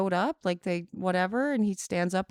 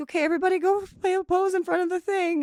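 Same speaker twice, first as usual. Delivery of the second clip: mock teary speech while crying, pitched up; 11 semitones higher, 3 dB louder than usual. Retelling asking everyone to pose for a picture: imitating own crying speech. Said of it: "and I'm taking your picture, and I'm crying".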